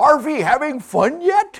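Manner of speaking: put-on heavy German accent, very high and loud. Retelling what a German man said while passing them, in a thick accent. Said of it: "he said in a thick accent".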